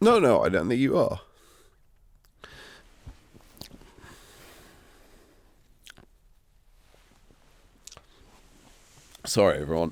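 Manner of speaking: apologetic, on the verge of tears, pitch swinging. Apologizing to everyone while getting upset, close to tears. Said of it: "why are you upset about this?".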